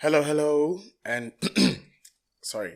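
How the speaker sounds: high, loud voice breaking and cracking. Host opening an episode of Nothing But Football, voice cracking. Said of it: "the voice cracked there a little bit".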